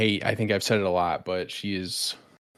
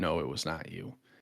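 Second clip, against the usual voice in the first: soft, hushed half-whisper; 3 semitones lower, 7 dB quieter than usual. Recapping a vote-out, the speaker quotes another person's half-whispered reply: retelling a half-whisper. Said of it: "Tevin kind of whispered".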